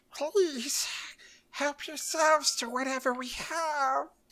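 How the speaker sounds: very high, shrill, loud creature voice, have stretched. Voicing a character offering food to others: Gollum voice. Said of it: "trying to do, like, Schmeagol or Gollum here".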